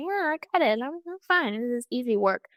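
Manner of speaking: high, breezy, offhand fake confidence. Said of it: "I like to front to myself".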